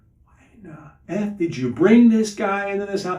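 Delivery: play-acted furious yell, angry screaming pitched high. Retelling what the former pagan in the kitchen screamed: imitating someone screaming. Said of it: "He's screaming, saying".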